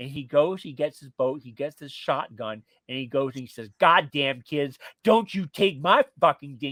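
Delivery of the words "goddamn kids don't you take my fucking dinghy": enraged, loud, furious swearing yell. Retelling how the furious king shouted at the kids: imitating a furious screaming king. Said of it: "He's screaming and shouting and swearing".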